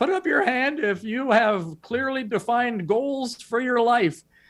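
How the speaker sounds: small, squeaky, little high voice. Speaker retelling their first words at the mic, in a squeaky little voice. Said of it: "my squeaky little voice".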